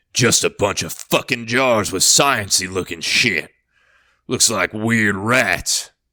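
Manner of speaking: scornful, scoffing tone. A narrator reads Tyr's remark as he peers into the freezer, scoffing. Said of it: "casual as ever, / he caught a flash of movement. / casual as ever".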